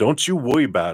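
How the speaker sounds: street gangster voice. Quoting what a man said in a funny manner: gangster voice. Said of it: "he's talking like a gangsta".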